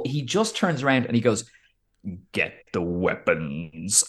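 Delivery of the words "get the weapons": very low, very deep, imposing movie henchman voice. Retelling a film scene where a huge man turns around: imitating a very deep voice. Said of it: "his voice is so deep".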